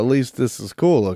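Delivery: plain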